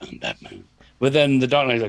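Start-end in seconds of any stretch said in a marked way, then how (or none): 0.0-0.6 voice dropped deep and gruff. Describing the Batman films, imitating the hero's line in gruff Batman voice. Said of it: "he's just like doing a gruff like".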